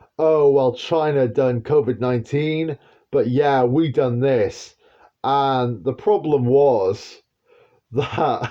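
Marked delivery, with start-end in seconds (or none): 0.2-4.8 crowing, smug, gloating, boastful tone. Retelling what they planned to say after releasing the virus: imitating someone gloating. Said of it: "gloat and say".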